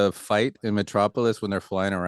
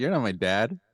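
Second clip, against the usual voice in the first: put-on boyish, young boy's voice; 2 semitones higher than usual. Quoting a movie line where the voice was pitched up: high-pitched young Clark Kent voice. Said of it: "They high pitched his voice".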